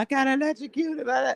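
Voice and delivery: put-on shrieking scream, pitched way up. Retelling running around thinking of being electrocuted: imitating own past screaming. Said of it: "I'm screaming".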